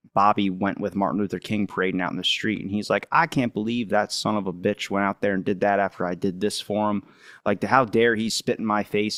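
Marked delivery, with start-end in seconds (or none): 3.1-9.1 mock fuming, aggrieved, indignant outburst. Retelling how a politician reacted to a rival's march: imitating someone angry. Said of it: "he's getting all pissed off".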